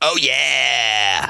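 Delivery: very slow, stretched-out, drawn-out "oh yeah". Praising smoky, sweet barbecue sauce in the Kool-Aid Man voice. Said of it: "I'm gonna give it the Kool-Aid guy".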